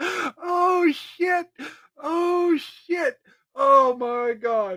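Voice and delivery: talking through laughter. Reacting to a video, laughing while talking. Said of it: "I can't stop laughing".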